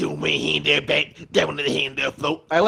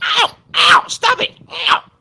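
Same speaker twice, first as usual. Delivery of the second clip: mock, very loud wailing, crying yelps of pain; 9 dB louder than usual. Acting out how he reacts whenever he's getting beaten up: mock cries of pain. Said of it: "whenever he's getting beat up".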